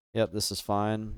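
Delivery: ordinary delivery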